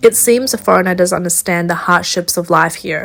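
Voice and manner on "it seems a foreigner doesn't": ordinary delivery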